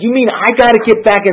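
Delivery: high, loud, angry yelling.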